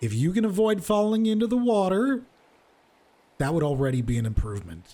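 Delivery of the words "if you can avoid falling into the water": very loud, high, swooping, taunting call. A woman at the table speaks up as you approach it: very loud. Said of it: "and the very the very loud".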